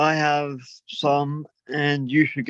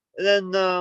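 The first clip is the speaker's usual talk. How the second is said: ordinary delivery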